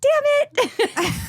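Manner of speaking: put-on very high small child voice. Retelling what they said as a child after dropping a beer: little kid voice. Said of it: "in my little kid voice".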